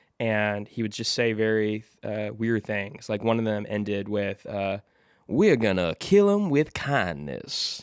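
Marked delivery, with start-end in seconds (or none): 5.3-7.8 raised, projected actor voice with swinging, swooping pitch. Quoting the ending line of a video: Kevin Spacey impression. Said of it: "You have a great Kevin".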